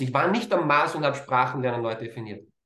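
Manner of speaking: ordinary talk, nothing marked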